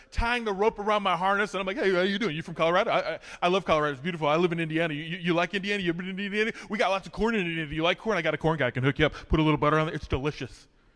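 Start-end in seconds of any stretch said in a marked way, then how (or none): 1.7-10.6 put-on fast nervous chatter, lower, quieter. Telling an audience about chatting to the girl tying his rope, retelling fast nervous chatter. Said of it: "I talk real fast".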